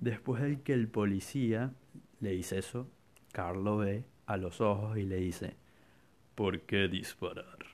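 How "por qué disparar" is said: put-on villain voice. Retelling the scene where Carl looks the policeman in the eye, in Carl's villain voice. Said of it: "con esa voz tal cual".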